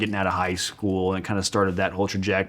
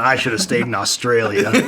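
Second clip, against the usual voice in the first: indistinct, mumbled, put-on old-man voice. Imitating grandpa mumbling to himself: imitating grandpa mumbling. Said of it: "Grandpa's mumbling".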